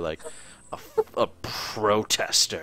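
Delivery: mock-disgusted tone. Speaker repeats what a man just said, mimicking his disgusted tone. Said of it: "the most disgusted fucking tone".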